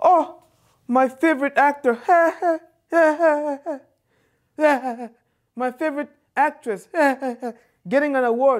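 high, teary gushing broken by laughs.

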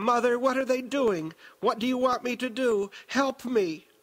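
put-on very high little-girl voice, pleading and begging. A woman calls to her mother for help; pleading in little-girl tones. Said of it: "Aaliyah pleaded in her little girl tones".

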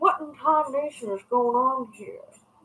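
cartoon Southern gentleman voice. Repeating the phrase she told me to say, in a Foghorn Leghorn voice. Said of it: "She sounds like Foghorn Leghorn".

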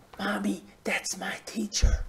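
put-on tiny, very soft small-child whisper. Recalling a child in the back row telling mommy about the teacher, imitating a child's whisper. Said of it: "the little whisper in the back row".

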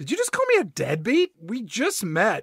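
put-on affronted, caught-off-guard, taken-aback, swooping tone. Retelling a movie scene, imitating the pet store owner, taken aback by the insult. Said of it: "and he says".

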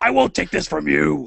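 squealing puppet monster voice.

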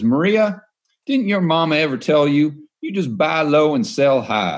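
stretched-vowel Southern drawl. Retelling a TV answer to a complex question: imitating Jim Rogers's Southern drawl. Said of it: "in his Southern draw".

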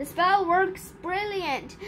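ordinary delivery

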